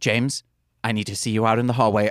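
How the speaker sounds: mock composed, even-toned, very calm teacherly voice. Retelling what a scared teacher said to a student: imitating a teacher speaking calmly. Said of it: "then very calmly said".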